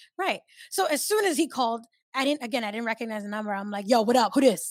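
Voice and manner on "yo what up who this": put-on aggressive tone, louder. Retelling answering a call from an unknown number, the speaker gives a mock-aggressive greeting. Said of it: "Like aggressive".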